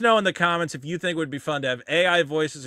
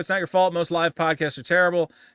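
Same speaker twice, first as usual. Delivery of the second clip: ordinary talk, nothing marked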